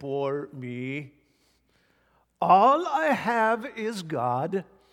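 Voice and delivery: put-on very slow, drawn-out, light Norwegian accent. Quoting a former Bible college teacher from Norway, imitating Dr. Eli Harju's accent. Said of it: "He had an interesting little accent".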